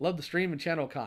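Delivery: normal talking voice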